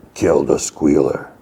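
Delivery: deep, monstrous voice. Recapping a scene where the hulking brute answers Eddie, in Des's deep monstrous voice. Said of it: "in a deep, like monstrous voice".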